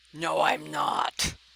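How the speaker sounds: guttural, rough bear voice rumbled from the throat. Burn the bear answers a remark about himself; guttural bearish voice as Burn. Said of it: "he says in a very guttural, bearish type voice".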